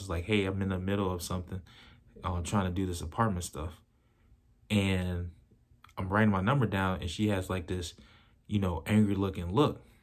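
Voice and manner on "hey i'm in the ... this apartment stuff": plain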